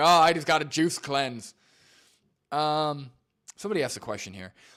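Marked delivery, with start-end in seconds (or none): 0.0-1.5 loud, higher mock confident know-it-all voice. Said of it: "Or he'll go back".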